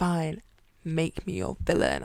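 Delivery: close, intimate, voiced stage whisper in the ear. Imagining someone sneaking up behind her, quoting a half-whisper in her ear. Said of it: "whispered in my ear".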